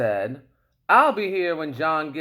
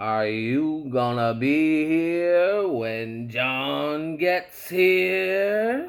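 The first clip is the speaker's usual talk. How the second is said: slow snarl, words dragged and drawn out. Reading a story aloud, voicing the cat speaking to the man: slow, snarly voice. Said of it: "said in a snow, slow, snarly voice".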